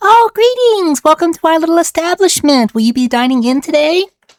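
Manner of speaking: very high-pitched fairy or pixie voice. Voicing a fairy greeting guests at a tavern door: pixie voice. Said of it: "One flies right up to your face, go".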